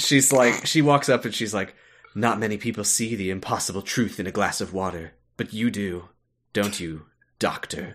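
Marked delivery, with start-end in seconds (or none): 2.1-8.0 mock enigmatic, riddling, mysterious tone. Retelling a character's first line to a doctor: imitating a mysterious, cryptic woman. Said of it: "so mysterious and cryptic when she walks".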